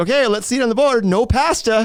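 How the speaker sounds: very high, exaggerated, overplayed pitch. Retelling a host reacting to an answer: Steve Harvey impression. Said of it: "doing the Steve Harvey thing".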